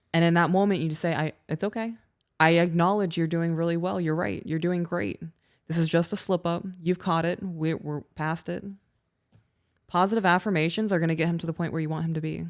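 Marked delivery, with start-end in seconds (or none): none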